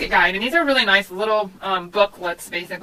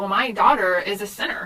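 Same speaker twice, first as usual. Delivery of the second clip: ordinary talk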